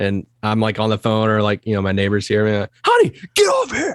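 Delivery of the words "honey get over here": mock, very high yelling. Retelling calling the dog in from the backyard: imitating own yell. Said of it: "yelling at my dog in the backyard".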